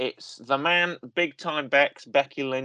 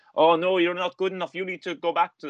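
awful, butchered put-on Irish accent; 4 semitones higher than usual. Retelling a wrestler's taunts to a rival: awful Becky Lynch impression. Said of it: "awful Becky Lynch".

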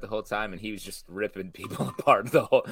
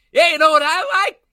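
put-on yell, higher and louder than normal voice; 9 dB louder than usual. Mocking a movie character's scene: imitating a woman yelling. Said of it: "Who yells so much in this movie".

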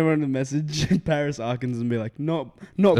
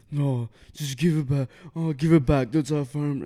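put-on, low-key, restrained, panicky pleading tone. Retelling a robbery, quoting a friend: imitating someone panicking. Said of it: "he's, like, panicking low-key".

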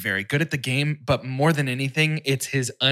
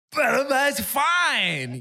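very high, swooping, drawn-out voice; 12 semitones higher than usual.

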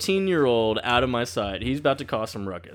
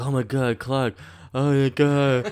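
put-on sedated drooling voice. Retelling how Ryan, still sedated, greets Clark: imitating sedated Ryan. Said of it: "still sedated".

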